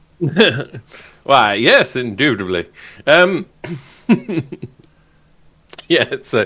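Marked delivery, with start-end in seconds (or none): 1.2-2.7 southern-sounding speech. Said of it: "showing off my southern accent there".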